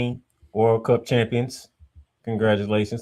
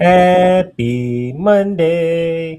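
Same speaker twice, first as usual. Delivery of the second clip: bright, raised, overly cheerful voice; 6 semitones higher, 7 dB louder than usual. Opening the show with a greeting to the co-host: too cheerful. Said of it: "You sound too cheerful".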